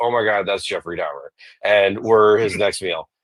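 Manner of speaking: normal talking voice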